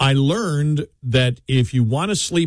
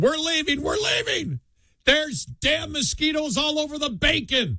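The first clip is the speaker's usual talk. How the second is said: very high-pitched screaming. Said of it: "you hear screaming".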